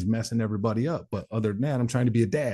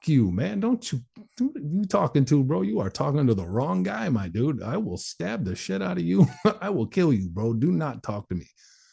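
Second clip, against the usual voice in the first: high, swooping, mock furious outburst, temper completely lost; 5 semitones higher than usual. In the hole, retelling how he answered the guy across the hall: retelling his own outburst. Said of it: "I spazzed out on him".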